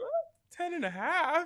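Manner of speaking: mock sweetest possible, very high sing-song voice. Retelling a friend's answer about a game bet: imitating Henry's sweetest voice. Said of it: "In the sweetest way possible".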